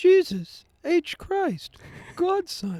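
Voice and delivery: very high, loud, drawn-out belted voice. Performing a comedy bit, voicing Jesus on a phone call: higher Jesus voice. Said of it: "his voice is higher than my voice".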